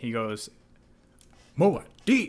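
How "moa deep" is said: shrill, very high, play-acted maximum-sass delivery. Retelling a Fremen's remark after Paul's fight in the film, imitating a sassy voice. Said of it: "just in the most sassy voice I've ever heard someone say".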